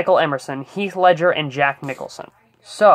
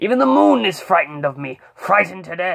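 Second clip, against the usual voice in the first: intimidating, menacing villain voice; 3 semitones higher than usual. Explaining how a villain voice was built, quoting its source in an intimidating voice. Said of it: "who had this very intimidating voice".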